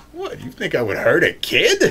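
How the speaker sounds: put-on character voice, slow and swooping. Describing a scene, speaker quotes what the thing says in a character voice. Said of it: "I don't know why I'm putting on a character voice".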